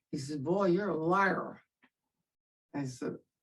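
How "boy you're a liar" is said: put-on Southern accent, drill sergeant voice. Retelling what the drill sergeant asked: Southern accent imitating Sergeant McCall. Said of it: "in his beautiful Southern accent".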